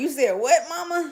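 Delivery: play-acted, high voice, words bubbling through a laugh. Retelling the daughter's reaction to the story, imitating daughter laughing. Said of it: "My daughter was laughing like".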